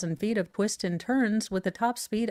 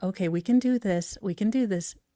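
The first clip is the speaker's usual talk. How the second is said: mock, utterly calm hostage-negotiator tone. Imagining talking down someone who freaks out, mock hostage-negotiator calm. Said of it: "negotiator thing".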